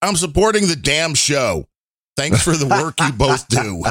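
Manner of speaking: ordinary delivery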